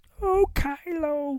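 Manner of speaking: very high-pitched puppet voice, diva manner. Acting out her reply to Kylo in a retold scene, in a Miss Piggy voice. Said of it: "Miss Piggy's Ren or Ray in this".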